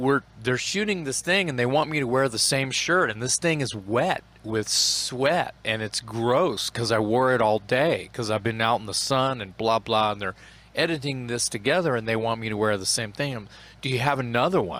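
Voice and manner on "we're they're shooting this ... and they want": ordinary delivery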